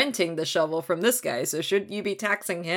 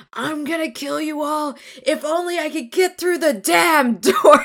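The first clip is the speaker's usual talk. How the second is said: acted, high, furious, raging wail; 9 semitones higher, 5 dB louder than usual. Retelling how she raged outside the inn, unable to get through the door: imitating a raging wail. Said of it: "outside the inn wailing and in a rage".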